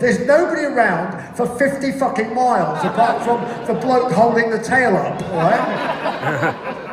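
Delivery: loud, laughing, exasperated delivery.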